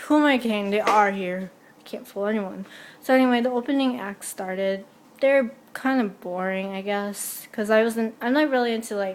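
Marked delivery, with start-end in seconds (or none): none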